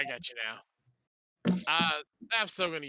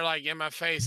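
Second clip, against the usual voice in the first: usual speaking voice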